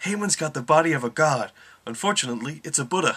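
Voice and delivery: high, loud, mocking commentary announcer impression.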